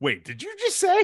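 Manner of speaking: play-acted very high, startled, shocked disbelief. Retelling a film scene where Jack repeats a line: imitating Jack sounding shocked. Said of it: "It's almost like he's shocked you said it too".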